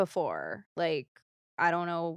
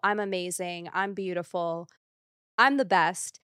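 ordinary talk, nothing marked

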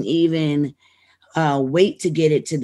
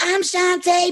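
tiny, very high, squeaky little voice; 14 semitones higher than usual. Retelling a night in Philly, the speaker acts out Shante on stage: little squeaky voice. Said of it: "with a little squeaky voice".

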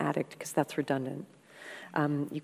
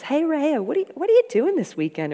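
very high, very loud, sweet Mississippi drawl; 12 semitones higher, 10 dB louder than usual. Retelling a dinner where a friend asks about the weekend: imitating Kat's sweet Mississippi drawl. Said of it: "she's from Mississippi, she has a sweet drawl".

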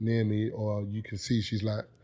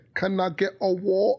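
exaggerated over-the-top British accent, very high pitch; 10 semitones higher, 4 dB louder than usual. Mocking how Americans imitate the UK accent, in an exaggerated British accent. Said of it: "whenever Americans imitate the UK accent, you proper like exaggerate".

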